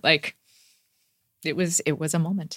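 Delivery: getting teary. Recalling crying in the school library the day she won, getting teary. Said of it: "I'm getting teary now".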